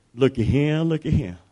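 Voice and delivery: gentle southern twang. Retelling a Bible story, voicing what Jesus said; Jesus with a southern twang. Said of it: "I'm putting a southern twang on it".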